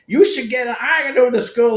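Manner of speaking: put-on man's accent. Retelling what a guy said at a convention table: imitating a guy's accent. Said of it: "That was his actual voice".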